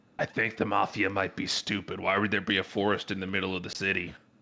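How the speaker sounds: confiding, hushed, half-whispered stage whisper. Speaking aside to one listener: half-whispering. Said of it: "I'm gonna kind of whisper to Jerry".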